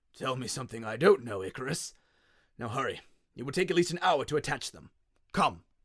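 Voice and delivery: put-on old man's croak. An old man, held up between two others, speaks: croaking old man. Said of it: "holding an old man between them ... the old man croaked".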